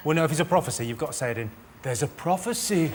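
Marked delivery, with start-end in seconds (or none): 1.8-2.9 put-on elderly man voice. Urging another speaker to say the prophecy properly, showing a blind old man voice. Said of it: "Like you're a blind old man".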